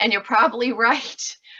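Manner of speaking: words breaking up with laughter throughout. Reacting to a private message about a microscope in a laundry room: laughing while talking. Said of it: "I'm sorry, I'm laughing".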